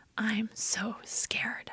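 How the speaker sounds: whispered delivery. Retelling what a man in recovery said during a hug: imitating a whisper. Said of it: "he whispered".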